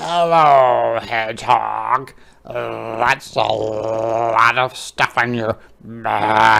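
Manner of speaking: croaky, slightly scary voice, "lot" drawn out. Reading a story aloud as Frog greets Hedgehog, croaky Frog voice. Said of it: "croaked is a bit of a scary sounding voice like I just did".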